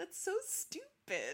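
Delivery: play-acted very high voice, cracking up laughing through words. Retelling your mother's reaction when she overheard it, imitating her cracking up. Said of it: "cracking up and just going".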